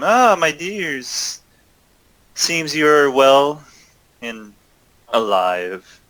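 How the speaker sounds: gentle feminine voice, very slow and drawn out. Game master voicing a character calling out to the players, in soft womanly voice. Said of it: "you hear a soft womanly voice call out".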